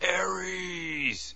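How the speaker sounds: furious, high-pitched, loudly yelled battle cry.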